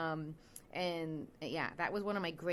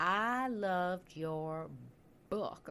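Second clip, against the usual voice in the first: clumsy, bad put-on Southern accent. Retelling what a woman said about the speaker's book, in a southern accent. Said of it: "I'm going to do a southern accent for you".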